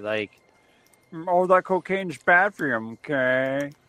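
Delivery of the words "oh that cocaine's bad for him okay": nasal school-counselor voice. Speaker describes someone leering down at them, doing a Mr. Mackey voice. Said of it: "like Mr. Mackey".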